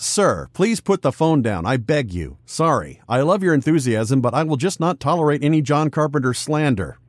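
ordinary talk, nothing marked

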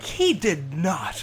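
put-on, worked-up, upset protesting tone. Recalling reacting to the listener's joke, retelling getting upset. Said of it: "I'm just like getting upset".

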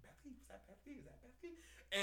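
many voices whispering together as a crowd.

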